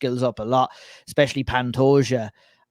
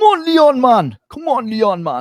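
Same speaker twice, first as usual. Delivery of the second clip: horrible fake Birmingham accent, very high and swooping; 11 semitones higher, 7 dB louder than usual. Previewing a fight, imitating fans cheering on Leon, in a bad Birmingham accent. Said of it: "That was a horrible Birmingham accident".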